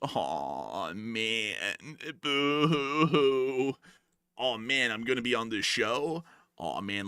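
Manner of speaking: put-on stoner voice. Reacting to being teased about the channel: put-on pothead voice. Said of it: "let me stop talking like a pothead".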